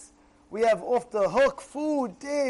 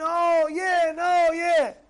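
put-on frightened little kid voice, high and very slow; 5 semitones higher than usual. Acting out a child afraid to taste food: imitating a scared kid. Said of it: "He gets scared".

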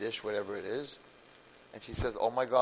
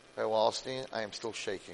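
normal talking voice

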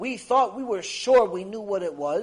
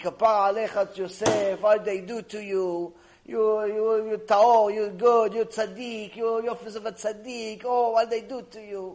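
mock old woman's voice, tearful, crying and grieving. Retelling how an old moroccan woman cries in a lecture: imitating a crying old moroccan woman. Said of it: "old ninety-year-old Moroccan woman crying".

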